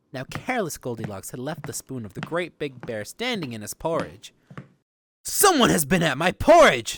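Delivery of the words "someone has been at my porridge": booming, rough, gruff voice. Narrator reading the Great Big Bear's line in the Goldilocks story, rough, gruff Great Big Bear voice. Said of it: "in his great, rough, gruff voice".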